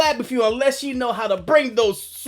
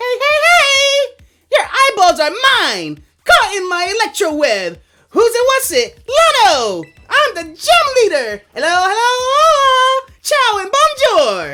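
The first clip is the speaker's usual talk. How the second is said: showy, loud, swooping put-on host character voice; 10 semitones higher, 5 dB louder than usual. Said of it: "My voice is going to be blown out".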